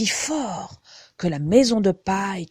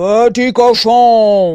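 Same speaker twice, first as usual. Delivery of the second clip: very loud, booming storybook wolf voice, "cochon" drawn out; 2 semitones higher, 13 dB louder than usual. Reading a fairy tale, the wolf calls to the little pigs at the brick house: big wolf voice. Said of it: "cria-t-il de sa grosse voix".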